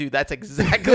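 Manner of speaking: ordinary delivery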